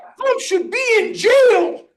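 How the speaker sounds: very high, shrill, blurted outburst. Telling a story, the speaker quotes a lady two tables away, imitating her shouting. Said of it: "she shouts out".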